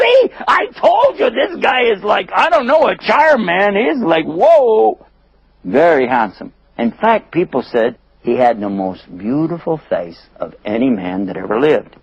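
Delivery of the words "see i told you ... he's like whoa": high, loud, gushing swooning lady voice. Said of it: "And she said".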